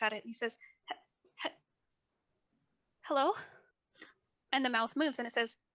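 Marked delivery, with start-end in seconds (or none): 0.9-3.3 fearful, stammering character voice, higher pitch. Voicing Jackson greeting a skull, looking fearful: fearful, stammering character. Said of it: "he looks so fearful".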